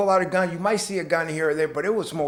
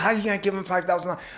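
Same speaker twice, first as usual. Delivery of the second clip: put-on angry tone; 2 semitones higher than usual. Retelling the girl's reaction in a story: imitating someone angry. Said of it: "she was so mad".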